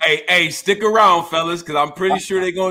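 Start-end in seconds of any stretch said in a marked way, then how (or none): none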